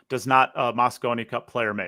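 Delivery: ordinary delivery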